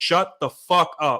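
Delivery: play-acted, full-volume, slow, drawn-out scolding shout. Retelling snapping at a girl in front of everyone: retelling a shout at full volume. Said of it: "as loud as I could".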